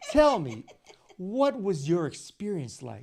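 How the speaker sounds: put-on stilted news-interviewer voice, sing-song. Imitating someone who once interviewed them: unnatural performed interview tone. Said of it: "they're doing the".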